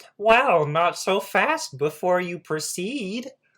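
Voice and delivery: very high frog puppet voice. Storyteller voicing a talking iron gate to the listeners, Kermit the Frog voice. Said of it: "Why does it sound like that?".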